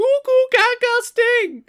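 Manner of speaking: put-on very high, very slow, loud, goofy baby talk. Retelling a scene of speaking to a baby: Monty Brown voice. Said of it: "starts speaking to the baby in Monty Brown voice".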